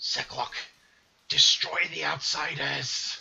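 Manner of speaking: loud, rough, guttural raspy voice from the throat. Voicing an unrecognized speaker from inside the room, in a raspy guttural voice. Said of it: "you hear in a raspy tone a voice".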